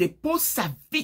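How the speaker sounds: mock harsh, sharp voice. Speaker retells a tense moment, giving an order in a hard, sharp tone. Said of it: "Je parlais sur un ton dur et tranchant".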